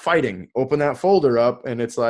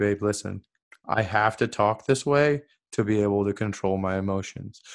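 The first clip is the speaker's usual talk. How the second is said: dropped-down hypnotic voice, lower and quieter; 4 semitones lower, 5 dB quieter than usual. Showing how he talks to her when really trying to communicate: hypnotist voice. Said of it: "I'll drop down into my hypnotist voice".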